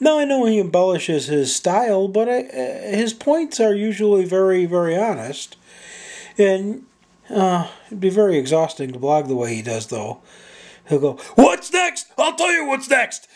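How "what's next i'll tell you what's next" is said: very high-pitched, fired-up, ranting holler. Imitating a blogger's catchphrase, imitating a blogger yelling. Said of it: "in that tone of voice, he'll yell his point".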